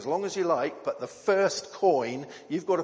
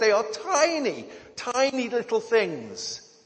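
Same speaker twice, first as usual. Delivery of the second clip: high little voice, "tiny" drawn out; 7 semitones higher than usual. Explaining a prophecy illustration with electrons; high voice. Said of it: "how high my voice goes".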